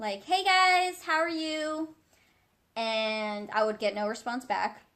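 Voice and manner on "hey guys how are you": loud, pitched-up calling out. Recalling saying hi to a group and being ignored, retelling own loud greeting. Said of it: "I know I was saying it very loudly".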